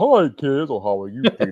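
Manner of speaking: put-on big, swooping, sing-song kids' show host voice. Demonstrating how Barney sounded in the early years, greeting kids in a low early-years Barney voice. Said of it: "Barney in the early years was way down here".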